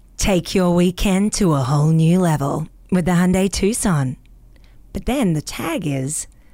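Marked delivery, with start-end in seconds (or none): 0.2-4.2 Australian accent with strong, hard R's. Speaker demonstrating how they read a car ad: aussie accent with hard r's. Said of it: "I read in my Aussie accent, but I throw in hard R's".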